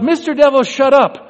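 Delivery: high, loud shouting. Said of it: "said out loud".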